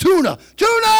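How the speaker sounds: loud high-pitched yell.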